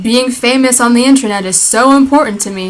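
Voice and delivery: normal talking voice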